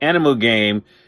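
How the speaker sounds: ordinary delivery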